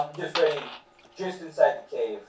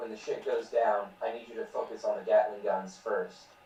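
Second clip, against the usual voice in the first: low, hushed mutter under the breath; 4 semitones lower, 9 dB quieter than usual. In a game, a player's character turns from the orcs to tell Lightfoot: under the breath. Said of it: "just like under my breath".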